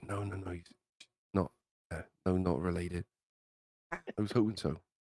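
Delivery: halting, hushed half-whisper. A character answers a question about someone's sister, half-whispering. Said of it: "Zed just kind of whispers".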